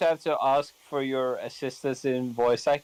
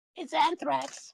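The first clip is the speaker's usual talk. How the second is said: very high-pitched cartoon rat voice; 14 semitones higher than usual. Playing a rat in an improvised bit, rat voice. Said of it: "I'll do the rat".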